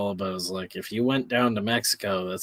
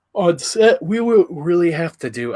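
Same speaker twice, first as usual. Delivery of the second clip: high, loud words stretched by a yawn; 9 semitones higher, 10 dB louder than usual. A speaker talks to the audience on a stream, yawning while talking. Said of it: "I don't know why I'm yawning".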